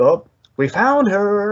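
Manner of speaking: mock thrilled, high, swooping, drawn-out exclamation. Retelling a scene where Joker finds the photo: imitating Joker excited. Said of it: "he's so excited".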